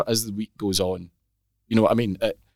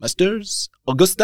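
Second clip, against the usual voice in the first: high-pitched put-on French accent; 9 semitones higher than usual. Retelling what a guy at a boat ride said: imitating a french accent. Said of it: "Do that accent again".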